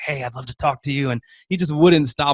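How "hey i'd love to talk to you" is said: put-on whispering. Retelling how a man spoke during someone's presentation: imitating someone whispering.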